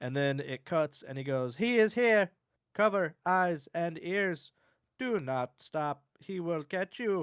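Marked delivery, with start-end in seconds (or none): 1.5-7.2 mechanical, robotic voice, high. Quoting what a figure in a video says after it cuts: robotic voice. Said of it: "That sounded more like a robot".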